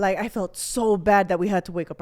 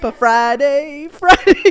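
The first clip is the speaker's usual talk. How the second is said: mock very loud, high, half-crying, near-tears wail; 5 semitones higher, 9 dB louder than usual. Retelling how Red reacted when her sister missed the bus: imitating Red half crying. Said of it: "halfway crying 'cause I didn't get on the bus".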